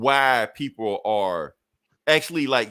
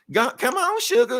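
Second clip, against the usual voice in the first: put-on old lady voice, much higher and louder; 4 dB louder than usual. Describing how Rogue sounds now compared to the 90s, Rogue as an old lady. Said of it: "now she sounds like an old lady".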